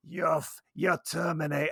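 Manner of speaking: put-on, crazy-sounding Maine accent. Retelling how a man got fired for mentioning the rats, in the crazy guy's accent. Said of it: "I'm doing the crazy guy's accent".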